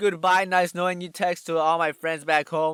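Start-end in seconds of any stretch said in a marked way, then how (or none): none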